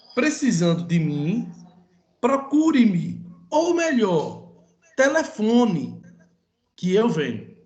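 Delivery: each phrase set apart, ou melhor isolated by pauses. Teacher pronounces a sentence for students to judge its punctuation, short pauses around ou melhor. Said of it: "a pronúncia dessa frase com as suas pausas de vida vai ser assim".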